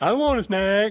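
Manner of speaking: goofy, klutzy dog voice, high and loud. Answering what voice the dog has in your head: put-on goofy dog voice. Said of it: "what kind of voice do you have for your dog?".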